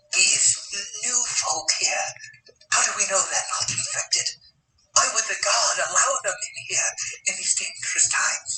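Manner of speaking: hushed whisper. Voicing a villager who asks a companion about newcomers: whispering. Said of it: "asks him in a very whisper voice".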